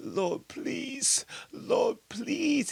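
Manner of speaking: mock, very high-pitched, begging plea. Retelling a man on the floor after dropping his poodle, imitating him begging. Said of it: "He was begging like a little bitch".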